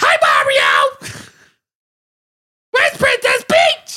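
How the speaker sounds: very high, loud, shrill yelled voice. A host challenges listeners at home, demonstrating a loud Toad voice. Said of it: "try to do a Toad voice and not be loud".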